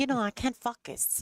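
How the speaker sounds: put-on French Canadian accent. Retelling Vero's repeated answer to the group, imitating Vero's French Canadian accent. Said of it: "if you say it in the French Canadian way".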